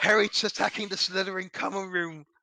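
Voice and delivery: put-on British accent. Voicing a professor scolding Harry: put-on British accent. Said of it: "I need to remember how to do British accent".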